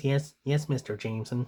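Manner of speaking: meek, feeble, bookish, weak nerdy voice. Describing the sixties Spider-Man cartoon, doing Peter Parker's weak nerdy voice. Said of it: "has kind of a weak kind of voice".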